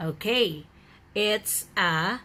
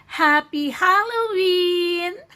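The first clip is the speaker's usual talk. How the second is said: very high-pitched, bubbly, cheerful voice; 11 semitones higher, 7 dB louder than usual. Showing how to greet students online on halloween: bubbly voice. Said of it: "a bubbly voice".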